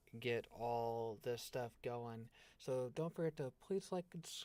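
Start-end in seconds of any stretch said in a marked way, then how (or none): 2.6-4.3 talking through a yawn mid-sentence, pitched up. Signing off to get some sleep, the speaker talks while yawning. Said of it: "sorry, I'm yawning".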